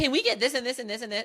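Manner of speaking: high-pitched, fast, rattled-off speech. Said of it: "your man starts being like".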